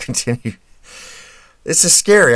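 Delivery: talking through laughter. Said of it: "I don't know why I'm laughing".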